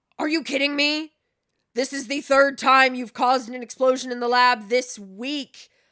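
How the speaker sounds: heated, loud, angry scolding. Acting out a lab scene, someone confronts the person who caused another explosion in an angry voice. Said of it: "the angry voice".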